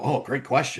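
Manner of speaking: quiet, private mutter under the breath. Retelling a remark made next to someone at the table: imitating own mutter under breath. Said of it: "mutter under my breath".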